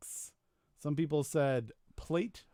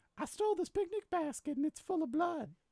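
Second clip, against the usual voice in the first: creepy voice squeaked up very high; 13 semitones higher than usual. Sending two people off for a weekend, the speaker voices the character: creepy pervert Winnie the Pooh voice. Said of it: "why Winnie the Pooh sounds like pervert".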